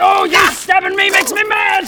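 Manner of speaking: angry, enraged pirate character voice. Playing a pirate fighting a minotaur: angry pirate voice. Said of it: "I'm an angry pirate".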